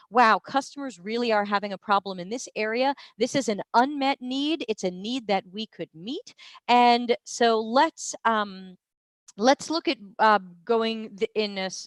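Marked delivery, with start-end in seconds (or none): none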